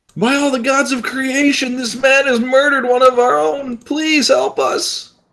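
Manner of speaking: frightened pleading tone. Voicing a frightened character begging the group for help: scared pleading. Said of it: "I think you're just really scared right now".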